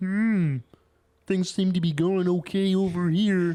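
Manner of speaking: high, loud frog puppet voice. Imitating a friend who showed up late: Kermit voice. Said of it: "Why does he sound like Kermit?".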